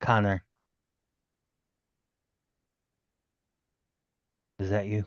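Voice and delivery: whispering. Calling quietly into a dark basement as a player character: whisper. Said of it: "and whisper".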